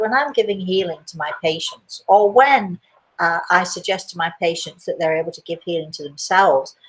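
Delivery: ordinary delivery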